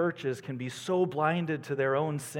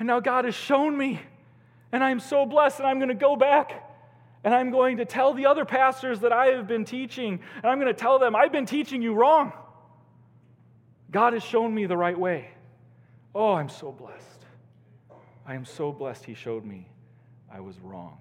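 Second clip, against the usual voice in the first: mock crying, high, loud, swooping, tearful outpouring; 8 semitones higher, 6 dB louder than usual. Retelling what a crying pastor said after a Bible session: imitating someone crying. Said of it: "and he was crying".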